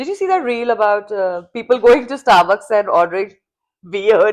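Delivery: normal talking voice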